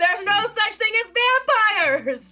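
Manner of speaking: very high, very loud yelling outburst. Retelling what a player's character yells: imitating someone yelling. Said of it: "He just yells out".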